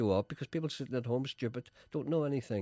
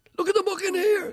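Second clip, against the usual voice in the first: high, loud ranting voice. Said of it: "Gregory Campbell ... rides again".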